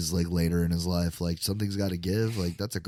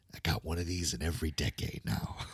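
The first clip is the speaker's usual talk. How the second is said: put-on drawling movie-star voice, quieter; 8 dB quieter than usual. Retelling a joke about two Oscar winners: Jack Nicholson impression. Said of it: "Robin Williams did a great Jack Nicholson impression".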